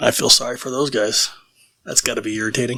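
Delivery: said under one's breath. Speaking in character about those guys nearby: muttering under breath. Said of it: "a little under my breath".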